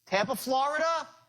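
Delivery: upward inflection at the end on "Florida". Demonstrating a sales-call technique to listeners, rising pitch at the end. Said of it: "by raising up my voice at the end".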